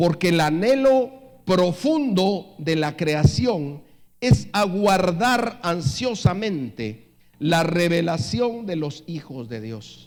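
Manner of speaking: slow, loud, deliberate reading. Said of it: "lo voy a leer despacio".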